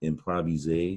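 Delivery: improviser said the French way, rising at the end. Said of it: "it became a French word".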